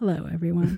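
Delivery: soft, low-pitched voice.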